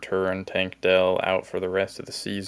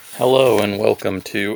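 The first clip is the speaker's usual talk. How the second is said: cracked voice, louder; 7 dB louder than usual. Opening a video when the voice cracks: voice cracking. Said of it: "voice crack".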